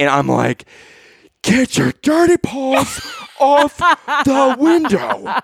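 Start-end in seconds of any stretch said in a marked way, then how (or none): 1.4-5.2 very high, slow, drawn-out, swooping yell. Retelling yelling at a four-year-old through a glass window, retelling a yell through glass. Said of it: "Like yelling through this glass window".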